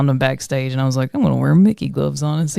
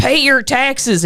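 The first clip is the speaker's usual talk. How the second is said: mock, very high hollered-out holler; 10 semitones higher than usual. Retelling hollering in a guy's face at Party Mike, retelling own holler. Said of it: "And then I hollered out".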